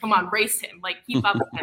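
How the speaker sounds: normal talking voice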